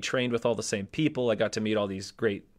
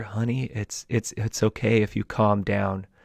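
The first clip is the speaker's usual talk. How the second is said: put-on whisper, slower; 2 semitones lower than usual. Retelling what someone whispered in the speaker's ear while dancing, imitating a whisper. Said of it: "she whispers in my ear".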